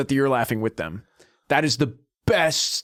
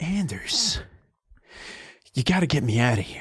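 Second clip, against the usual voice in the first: put-on loopy, woozy grandmother voice; 3 dB quieter than usual. Retelling a phone call with a grandmother just out of surgery: imitating a loopy grandmother after surgery. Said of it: "She's still loopy from the drugs".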